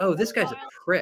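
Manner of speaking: dejected, deflated, resigned tone. Retelling how Shatner reacted to Bezos after landing: imitating dejected William Shatner. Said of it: "And then Shatner is just dejected".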